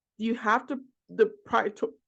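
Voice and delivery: stumbling over words. Speaking to a class, stuttering. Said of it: "I can't I'm stuttering today".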